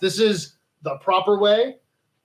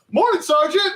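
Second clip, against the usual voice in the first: put-on high, loud, chipper young man's voice. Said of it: "the young chipper guy".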